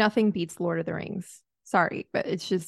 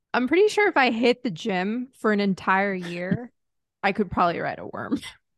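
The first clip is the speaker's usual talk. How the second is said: ordinary talk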